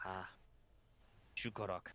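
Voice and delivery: barely voiced, hushed, breathy whisper. Acting out how the line goes, in a hushed voice. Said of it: "kind of in a hushed voice".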